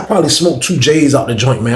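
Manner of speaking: ordinary talk, nothing marked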